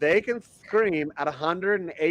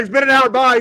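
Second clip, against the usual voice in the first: mock excited voice, higher and louder; 8 semitones higher, 8 dB louder than usual. Mimicking another speaker leaving for his pay gig: imitating someone excited. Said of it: "He's all excited".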